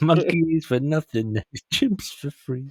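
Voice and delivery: savoring each word through laughter.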